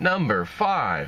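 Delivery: robotic, mechanical radio announcer voice. Recalling a radio top-five countdown, the speaker mimics it: robotic radio countdown voice. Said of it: "I ought to talk like that".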